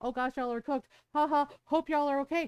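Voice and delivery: mocking, jeering taunt. Retelling how people in other countries dunk on us in TikToks: imitating people mocking online. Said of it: "dunking on us and being like".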